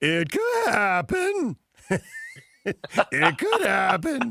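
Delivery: very slow, voice breaking on purpose. Imitating a TV analyst's catchphrase, letting the voice break on purpose. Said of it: "he lets his voice break on purpose".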